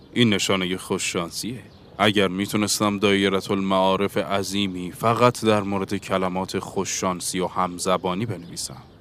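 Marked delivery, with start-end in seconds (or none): none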